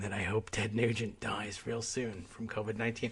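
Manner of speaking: low, hushed half-whisper, barely audible. Confessing a grim wish about a public figure, the speaker is half-whispering. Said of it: "I'm whispering".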